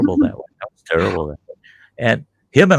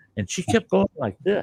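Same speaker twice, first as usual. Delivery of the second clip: plain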